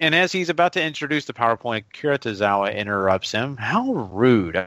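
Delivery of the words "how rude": the word rude held out long. Recapping a match, then doing a Stephanie Tanner impression. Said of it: "my best, uh, Stephanie Tanner impression".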